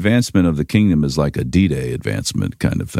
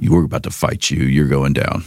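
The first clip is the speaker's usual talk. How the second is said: firm, severe tone. Laying out ways to face an enemy, the second option in a stern voice. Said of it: "you walk out with a stern voice".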